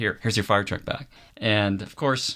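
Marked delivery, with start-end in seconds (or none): none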